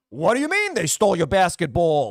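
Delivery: acted-out angry uncle outburst, swooping pitch. Speaker mimicking an actor's usual sitcom supporting role, imitating an angry uncle. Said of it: "He was the angry uncle in everything".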